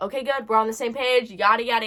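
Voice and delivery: ordinary talk, nothing marked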